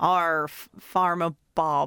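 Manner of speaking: imitated West Country accent. In a talk about which accent is being done, try a put-on West Country accent. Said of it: "I'm being West Country".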